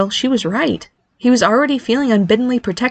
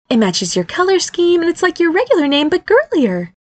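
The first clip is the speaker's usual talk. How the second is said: eager, lively, excited, animated, high-pitched voice; 7 semitones higher than usual. A mother urges her son to consider a new name: speaking excitedly. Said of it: "Dania said excitedly".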